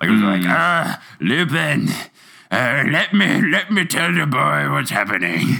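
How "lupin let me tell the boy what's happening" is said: put-on drunken voice, pitched higher. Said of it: "He just sounded like a more drunk Hagrid".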